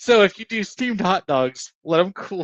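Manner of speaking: high voice, talking through laughter. Giving a tip about steamed hot dogs: laughing while talking. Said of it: "I don't know if he's laughing or he's crying".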